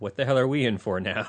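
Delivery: plain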